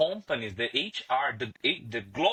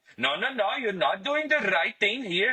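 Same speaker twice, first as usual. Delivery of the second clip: put-on Indian English accent, pitched up; 9 semitones higher than usual. Teacher telling students how an indian speaker would talk, indian english accent. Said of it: "he's going to talk like".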